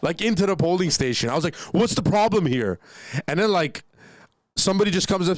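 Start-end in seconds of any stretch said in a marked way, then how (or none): 1.5-2.8 hostile, aggressive, confrontational tone. Retelling walking into a polling station: imitating own aggressive tone. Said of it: "and I went so aggressive".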